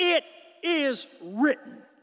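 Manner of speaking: play-acted firm, solid voice, nothing soft. Speaker acting out Jesus answering the devil in the wilderness, acting out a firm voice. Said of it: "Firm voice".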